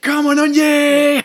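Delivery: mock war cry, very high and very slow.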